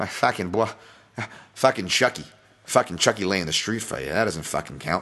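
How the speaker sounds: put-on Boston-accented delivery. Talking to folks about a betting line, slipping into a Boston accent. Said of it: "Boston accent there".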